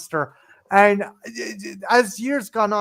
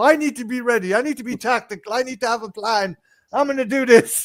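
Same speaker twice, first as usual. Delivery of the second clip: pumped-up, self-hyping, energized tone; 4 semitones higher than usual. Retelling a film scene where a character builds himself up: Ernest psyching himself up. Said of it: "gives himself this monologue to build himself up".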